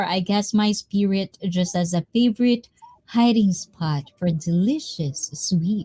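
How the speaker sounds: plain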